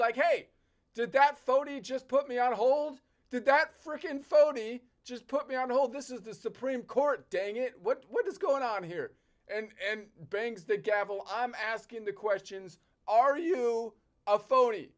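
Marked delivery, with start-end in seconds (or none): 0.2-9.1 acted-out outraged, angry, indignant rant. Acting out a judge put on hold by a phone: imitating an angry judge. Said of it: "I'm rightfully pissed".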